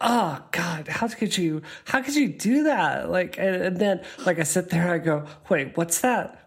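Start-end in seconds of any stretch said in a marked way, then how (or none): 0.0-3.1 put-on mean girl voice, slower. Telling a listener about the inner voice she sometimes hears, inner mean girl voice. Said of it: "I get that inner mean girl voice".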